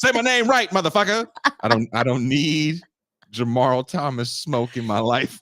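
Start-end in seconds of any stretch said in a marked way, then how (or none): 0.0-1.3 very high, menacing, threatening tone. Imagining a big man showing up to confront the speaker, mock-threatening tough guy. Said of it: "coming to the show trying to fight me".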